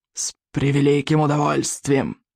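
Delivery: hissed, hissing voice. A narrator reads a young dragon's eager reply in a story: hissing. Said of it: "прошипел он".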